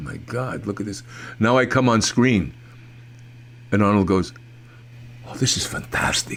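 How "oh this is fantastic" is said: breathy whisper, sounding impressed. Recalling Arnold's reaction while watching the film: Arnold impression. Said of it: "doing as flawless an Arnold impression as I ever heard".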